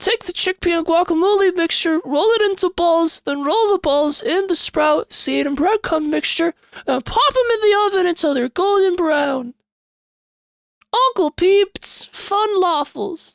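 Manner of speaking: very high-pitched cartoon character voice. Explaining the recipe as the character Gorpy: Gorpy's voice. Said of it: "Sounds like Steven Universe".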